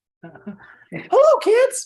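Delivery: pitch goes way up high, swooping around. Asking how another speaker meant to greet the kids, in high-pitched Mickey Mouse voice. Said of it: "in like a high pitched Mickey Mouse voice?".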